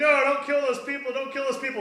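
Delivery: mock, high, repeated pleading beg. Retelling a movie scene, voicing Clark begging Zod: imitating Clark begging. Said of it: "he's just, like, begging".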